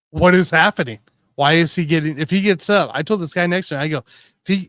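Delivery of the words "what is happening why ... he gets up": ordinary talk, nothing marked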